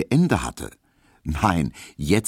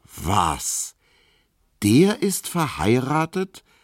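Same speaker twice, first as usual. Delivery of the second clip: very slow, high-pitched, disbelieving incredulous tone; 6 semitones higher than usual. Told who the postman is, a man asks in disbelief; incredulous question. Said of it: "fragte Emil Kubinke ungläubig".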